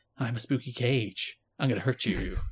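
eerie, soft, spooky put-on female voice. Speaker recalling the female voice in an opening: put-on spooky female voice. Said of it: "a female voice being like".

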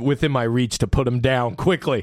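ordinary delivery

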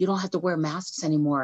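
imitated whisper. Retelling what a mom told her daughter sitting beside her: imitating a whisper. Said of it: "her mom leans over and whispers".

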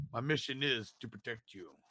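put-on robot voice with Austrian accent. Quoting the Terminator after talk of its Austrian accent: Arnold Schwarzenegger Terminator impression. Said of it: "with an American Austrian accent".

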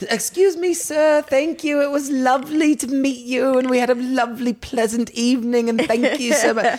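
high, hammed-up, overpolite voice. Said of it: "really hamming it up".

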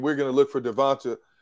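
ordinary talk, nothing marked

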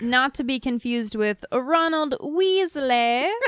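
terrible, bad, fake put-on British accent. Co-host correcting a name mix-up, breaking out a terrible fake British accent. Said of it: "Breaking out the old terrible British accent".

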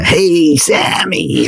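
put-on big, high, drawn-out, croaky old jazzman voice.

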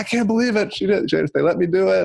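acted, high-pitched scream full of disbelief. Retelling how she came home after getting a yes: imitating someone screaming.

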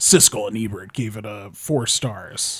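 slow movie trailer announcer voice. Retelling how old movie trailers sounded: movie trailer announcer voice. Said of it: "the movie trailer guy's voice be like".

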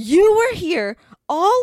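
high, slow, loud, drawn-out yell. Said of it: "she was, like, yelling at us".

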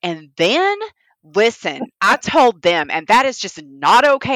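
put-on loud, riled-up, angry, very thick country accent. Explaining how their accent changes, acting out getting mad in a mock-mad country accent. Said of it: "if I get mad, I get real country".

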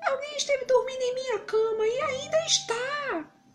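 put-on tiny, very high-pitched little baby voice. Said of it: "numa voz bem pequenina".

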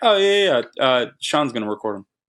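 mock, flat, deadpan delivery. Recounting someone's answer about who will record the drums, imitating a deadpan reply. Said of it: "And just deadpan".

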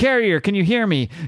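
light, high call carried across a distance, yelled. Retelling a story, acting out a man calling for the carrier: retelling a yell. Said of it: "And he yells".

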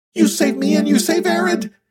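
very high, shrill, squeaky voice. A narrator reading a story voices a character's line, squeaking. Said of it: "he squeaks".

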